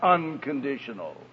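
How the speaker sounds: "unconditional" stressed hard, pressed low and soft.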